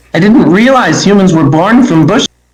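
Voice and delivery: high, loud sarcastic shout.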